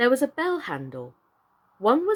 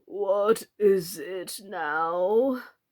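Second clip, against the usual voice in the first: deep, husky, hoarse croaking frog voice, stretched; 3 semitones lower than usual. Reading a story aloud, the frog speaks to Alice in a deep, hoarse frog voice. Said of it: "the frog said in a deep, hoarse voice".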